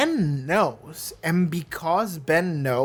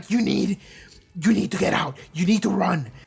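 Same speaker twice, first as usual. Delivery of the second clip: desperate, fearful voice; 2 semitones higher than usual. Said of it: "how desperate he turned immediately".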